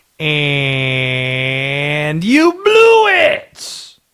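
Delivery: slow comedic drawl, "and" drawn out, pitch swinging. Ribbing someone about blowing their shot at a home game: Sandler impression. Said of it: "That's the best Sandler impression I got".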